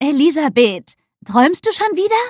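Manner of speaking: very high, very loud, rising calling out. Narrator reads a friend startling a daydreaming girl, in a high voice. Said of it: "Die hohe Stimme ihrer Freundin".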